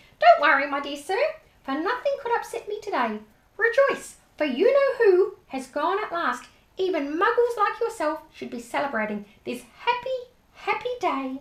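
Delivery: put-on very high, squeaky old-man voice. Narrator reads an old man's words to Mister Dursley in a squeaky voice. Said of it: "he said in a squeaky voice".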